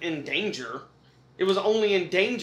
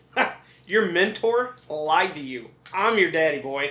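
put-on taunting villain voice; 3 dB louder than usual. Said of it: "roasts him by being like".

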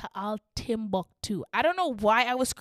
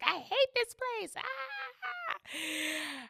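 put-on very high, very slow, stretched-out wailing scream; 10 semitones higher, 7 dB quieter than usual. Retelling standing on the couch after a bad day: imitating her own screaming. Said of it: "So I just start screaming".

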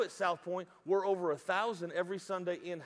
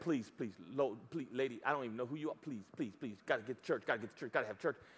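mock pleading tone, lower and quieter; 6 semitones lower, 5 dB quieter than usual. Pastor retelling how he begged a lady at the gate from his truck, imitating his own begging.

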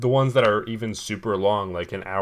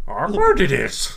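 put-on wise old alien voice, higher and louder; 8 semitones higher, 6 dB louder than usual. Joking with another speaker in Yoda-style speech: Yoda impression. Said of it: "do Yoda impressions".

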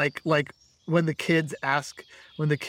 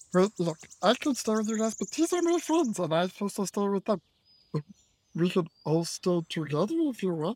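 tiny miniature dragon creature voice, pitched up; 5 semitones higher than usual. After being told you can stay in, answer the group in a miniature dragonborn voice. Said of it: "We have [name], the miniature dragonborn".

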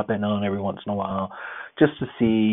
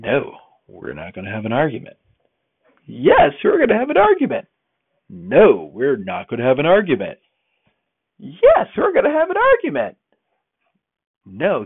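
back-and-forth bickering with oneself, rising and raised voice; 4 semitones higher, 5 dB louder than usual. Retelling arguing back and forth with oneself in the mirror, voice rising. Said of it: "my voice is kind of going up".

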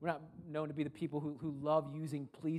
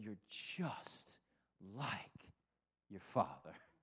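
mock fed-up, exasperated, breathy hushed whisper; 6 semitones lower, 6 dB quieter than usual. Recalling what the speaker's mother used to say, mimicking her exasperated tone. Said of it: "It was always in a very exasperated tone".

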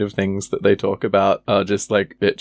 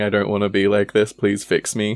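normal talking voice

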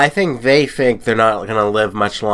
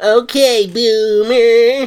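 very high squeaky voice, "boomer" stretched long; 14 semitones higher, 4 dB louder than usual. Jokingly firing back at a boomer joke: Urkel voice. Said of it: "It's like Urkel voice".

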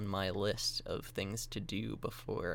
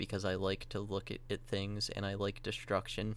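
ordinary talk

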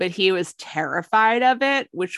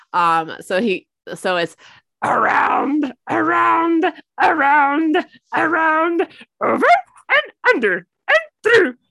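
puppet monster voice, much higher, louder, slower; 10 semitones higher, 5 dB louder than usual. Speaker acts out a lesson he has just described, Grover voice. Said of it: "That is such a good Grover".

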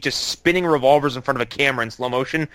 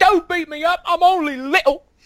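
put-on crying voice, very high and slow; 4 dB louder than usual. Describing a film scene, the speaker quotes a character's line in a fake crying voice. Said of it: "he puts on a fake crying voice".

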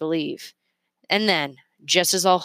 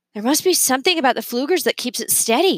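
laughing through words, higher pitch; 7 semitones higher than usual. Narrator reads Remy's line on the hotel roof that night, laughing.

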